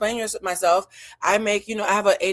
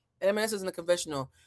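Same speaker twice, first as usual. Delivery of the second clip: usual speaking voice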